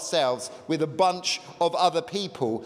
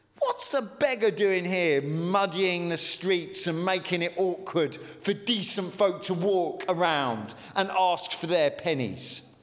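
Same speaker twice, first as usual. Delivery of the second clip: ordinary talk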